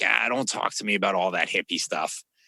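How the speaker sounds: thick, heavy, put-on Boston accent, tough guy. Retelling what a coaching prospect said, imitating a heavy Boston accent. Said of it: "the heavy Boston accent".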